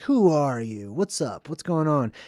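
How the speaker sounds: hard, super tough tough-guy bluster. Retelling a film scene, imitating a character getting super tough. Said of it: "He gets super tough right here".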